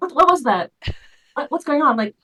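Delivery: loud, high-pitched calling out. Voicing a character calling out in the night: calling out. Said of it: "Thalia calling out".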